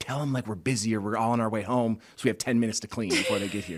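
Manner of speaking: whispering. Retelling what they told the guy on the phone: imitating a whisper. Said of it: "whisper to him".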